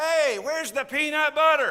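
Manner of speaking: very loud, high-pitched put-on man's holler. Calling out from the pantry to someone in the back bedroom: hollered in a put-on male voice. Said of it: "I holler out in my male voice".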